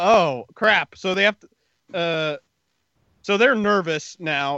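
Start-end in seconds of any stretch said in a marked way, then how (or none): none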